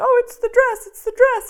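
very high-pitched, weepy, tearful gushing. Retelling standing in the corner at a wedding dress fitting: imitating own past crying. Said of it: "standing in the corner crying, going".

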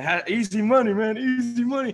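very high, loud, boastful gym-bro bragging. Mocking what someone says after a lift: imitating a lifter bragging. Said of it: "Someone does a lift and they say".

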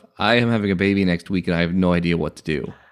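plain

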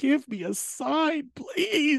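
mock crying, very high, very slow, drawn-out tearful voice. Retelling a plea for a sign made while walking through the park: imitating own past crying. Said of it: "walking through Central Park crying, going".

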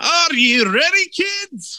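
very high, squeaky cartoon voice with Scottish accent. Podcast hosts joking around, one calls to the kids in Scottish SpongeBob voice. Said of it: "Sounded like a Scottish SpongeBob".

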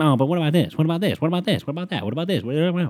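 mocking, high-pitched, nagging woman's voice.

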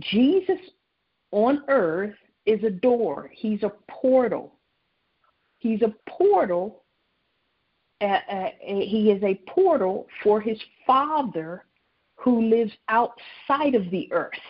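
unhurried, slow, deliberate, spelled-out delivery. Explaining a point to listeners so they can get it, speaking slowly. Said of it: "Let me say this slowly".

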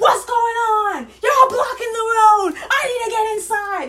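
shrill, very high, very loud, drawn-out yell. Retelling a story someone told about a woman yelling at a cop, imitating a woman yelling. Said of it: "she's yelling".

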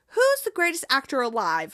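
plain

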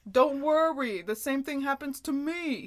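loud Italian-American guy voice. Retelling a TV scene, doing Joey's reassuring line in Joey's voice. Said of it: "It's Joey's voice".

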